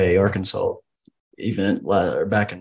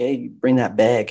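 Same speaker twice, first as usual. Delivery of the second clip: Wisconsin-sounding speech; 4 semitones higher than usual. Trading regional accents with a friend, in a Wisconsin accent. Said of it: "Wisconsin's a good one".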